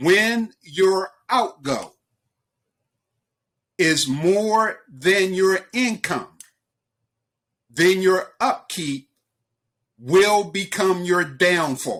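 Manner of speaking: measured, slow, deliberate word-by-word delivery. Speaker repeating a saying to Lou and Russ so listeners can write it down, speaking slowly. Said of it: "I'm going to say it slowly".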